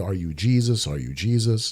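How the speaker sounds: quiet growl under the breath, repeated. Retelling a face-to-face confrontation where a man growled back, imitating someone growling. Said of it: "He's growling back at me".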